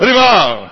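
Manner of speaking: high, loud, joyful cry.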